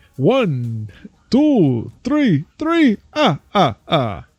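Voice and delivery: loud, swooping Transylvanian vampire count accent. Answering a remark about sounding Transylvanian, doing the Count from Sesame Street voice. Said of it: "or I could have gone for the count from Sesame Street".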